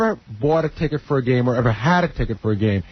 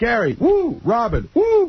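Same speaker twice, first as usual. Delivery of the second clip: high yelled name followed by a woo. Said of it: "It's like".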